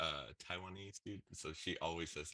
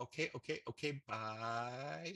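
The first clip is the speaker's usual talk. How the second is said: very slow, high, with bye stretched long; 6 semitones higher than usual. Retelling a phone call to a Chinese place: imitating Kat's mom's voice. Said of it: "it sounded just like Kat's mom".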